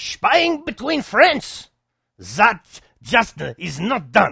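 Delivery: loud, high, bad German accent. Quoting Angela Merkel in a news report, in a terrible German accent. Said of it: "That's a terrible German accent".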